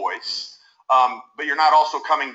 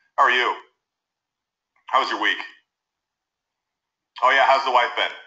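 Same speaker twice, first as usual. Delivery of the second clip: low tone sinking away at the end of each phrase; 2 semitones lower than usual. A speaker demonstrating rapport-breaking tonality, trailing off with a lowering tone. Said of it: "trail off with a lowering in the tone of your voice".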